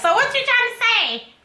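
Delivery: very high, shrill, loud, motherly voice. Imitating a mama who objects to hearing "I'm old": imitating my mama. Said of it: "Like my mama, she gonna be like".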